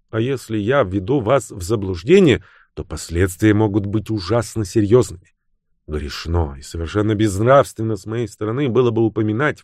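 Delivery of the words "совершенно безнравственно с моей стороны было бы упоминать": plain reading voice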